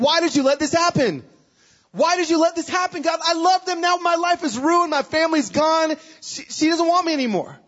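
play-acted shrill screaming rising upward, very high-pitched. Retelling nights of despair, reenacting screaming at god: retelling screaming at god. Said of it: "I'm screaming at God".

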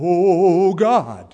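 loud, pious pulpit preacher voice, long drawn oh. Showing how preachers suddenly talk when speaking to God: preacher's prayer voice. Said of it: "some people have a prayer voice".

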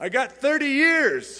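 very high yell in Scottish brogue. Retelling what a prisoner shouted out, in a Scottish brogue. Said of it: "shouted out in a Scottish brogue".

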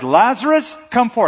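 mock powerful, loud, high, commanding shout. Explaining the lazarus story, retelling a shout. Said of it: "he shouted".

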